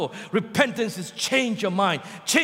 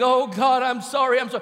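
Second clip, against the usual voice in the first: fake crying and weeping, weepy sobbing. Imitating remorseful churchgoers apologising to god: mock crying and weeping. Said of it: "Crying and weeping".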